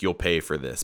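put-on super mad tone. Retelling a movie scene where a character threatens: imitating someone super mad. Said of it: "He just gets super mad and he's like".

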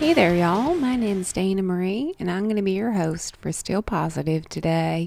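drawling, slipped-into Southern accent. Host welcomes listeners to Still Positive, Southern drawl. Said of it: "I sometimes slip into that voice, especially when I start saying y'all. It just needs like a drawl".

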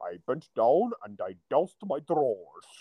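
savoured, relished signature storytelling voice of famous actor. Retelling an actor's story from a documentary: John Rhys-Davies voice. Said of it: "in that great fucking voice".

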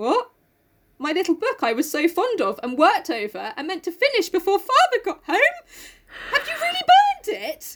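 put-on frightened voice. Reading a sister's shocked reply from a book: acting scared. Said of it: "She's more, like, scared".

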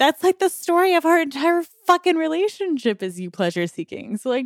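angry, spat-out delivery.

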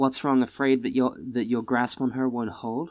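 muttered low under the breath. Playing Serena in the scene, answering another character: muttered under her breath. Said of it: "under her breath says".

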